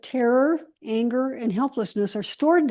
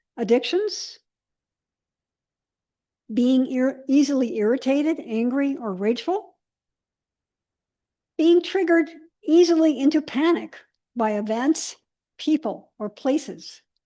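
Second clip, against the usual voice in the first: slow, deliberate, unhurried reading, item by item. Reading a list aloud to listeners, reading slowly. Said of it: "I'm going to read them slowly".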